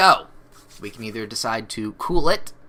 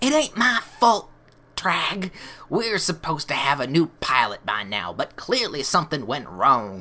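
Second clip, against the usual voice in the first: put-on Texan accent, drawled throughout; 3 semitones higher than usual. Voicing a pirate in a game argument: texan accent. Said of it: "why these are Texan now".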